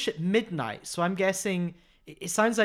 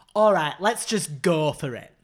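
loud, slow, drawn-out, big encouraging tone; 5 dB louder than usual. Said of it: "My [name] impression is".

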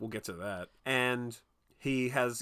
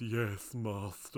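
put-on AI assistant voice; 2 semitones lower, 4 dB quieter than usual. Retelling a movie scene, answering as the home AI program: imitating the AI Igor. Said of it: "And goes".

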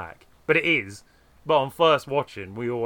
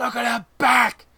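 mock screeching shout, higher and louder; 12 semitones higher, 5 dB louder than usual. Retelling a film moment when George screams at the others: imitating George's screech. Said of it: "his voice screeching out, scratching his vocal cords".

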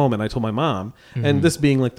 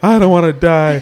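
put-on woman's voice, higher and louder; 5 semitones higher, 6 dB louder than usual. Retelling own words after a bad cut: imitating a woman hit by a car. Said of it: "started talking just like that woman that got hit by the car".

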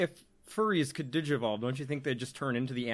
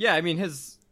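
ordinary talk

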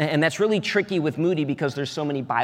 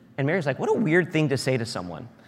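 ordinary delivery

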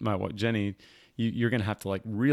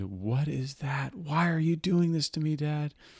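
play-acted terrified little girl, high and screaming; 5 semitones higher than usual. A father retelling his daughter screaming at him while held down: imitating her scream. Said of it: "And she screamed".

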